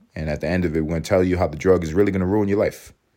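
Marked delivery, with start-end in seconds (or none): none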